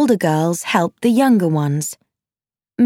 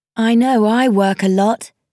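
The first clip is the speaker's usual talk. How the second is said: ordinary delivery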